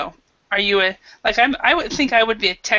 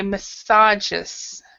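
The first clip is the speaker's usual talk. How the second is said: massages, stress on second syllable sa. Class pronunciation exercise: stress on second syllable of massages. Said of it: "we stress it in the second syllable".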